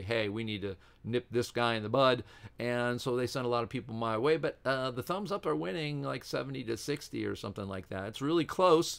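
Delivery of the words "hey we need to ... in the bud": usual speaking voice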